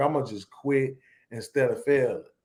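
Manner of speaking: ordinary talk, nothing marked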